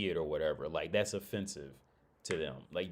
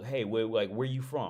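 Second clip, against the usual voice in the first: choppy, halting broken-English speech; 3 semitones higher than usual. Retelling a stranger in the mall asking where he is from: imitating broken english. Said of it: "in real broken English".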